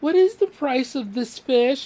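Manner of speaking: very high, cutesy, sweet put-on voice. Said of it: "I was trying to be cute".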